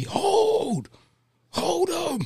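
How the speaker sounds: high, pleading yell.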